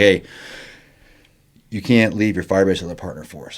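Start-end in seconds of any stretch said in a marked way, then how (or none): none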